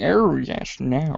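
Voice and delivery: very camp delivery, laid on thick. Imitating the cartoon character voiced by Kenneth Williams: camp Kenneth Williams voice. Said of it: "He's like the campiest".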